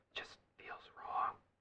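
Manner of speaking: hushed whisper. Answering someone who asks why they are whispering, whispering. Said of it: "Why are you whispering?".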